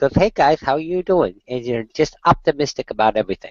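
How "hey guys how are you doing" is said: cheery, high little dog voice with slight lisp. Showing how the dog Noodle talks: Noodle voice with slight lisp. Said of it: "she talks like this. ... she's got a little bit of a lisp".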